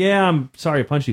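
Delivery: ordinary delivery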